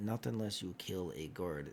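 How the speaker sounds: hushed, secretive half-whisper, voice dropped low. Voicing a shopkeeper telling the players how to get wands: half-whispering. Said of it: "and he, like, whispers".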